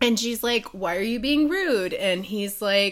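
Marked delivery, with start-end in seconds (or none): none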